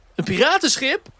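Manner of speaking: very high, shouted cry. Narrator reads a character's shouted question; shouted question. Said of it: "Schreeuwde hij nu".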